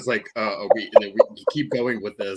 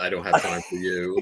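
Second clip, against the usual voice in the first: put-on exasperated voice, lower; 3 semitones lower than usual. Imitating a show character brushing someone off: imitating Mar Devil's exasperation. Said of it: "I love that Mar Devil's exasperation".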